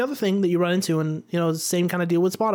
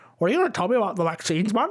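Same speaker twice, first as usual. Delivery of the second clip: put-on choking, chewing voice, faster. Quoting a deliberately bad impression heard on a recording: bad Joe Rogan impression, chewing. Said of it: "It almost sounds like he's choking a little bit".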